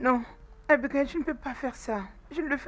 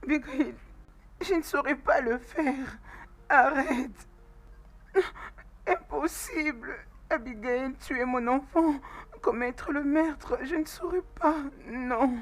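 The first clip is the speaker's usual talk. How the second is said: tearful, crying speech broken by sobs. Refusing to kill one's own child: crying while talking. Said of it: "arrête de pleurer".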